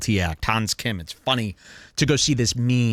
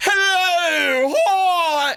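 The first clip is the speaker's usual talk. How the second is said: very high, grating, put-on comedian voice; 4 dB louder than usual. Demonstrating a voice that comics have tried, comedian voice. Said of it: "comics have tried this voice, this".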